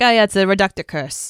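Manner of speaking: accent from Rhode Island. Showing how people here in Rhode Island would say it, in a Rhode Island accent. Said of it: "You know how like we here in Rhode Island, it would be like".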